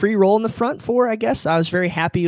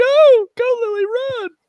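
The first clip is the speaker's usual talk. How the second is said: put-on, very high, hoarse, voice-cracking shout. Showing how the yelling at kids' soccer practice sounded: imitating own hoarse cracking yell. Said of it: "I sound like this".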